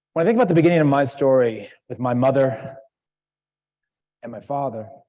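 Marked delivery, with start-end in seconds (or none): 2.0-4.9 "mother," then a long silent gap, then "father". Beginning a personal story, long pause between mother and father. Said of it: "Did you hear how I said that? ... with this three seconds of silence between them".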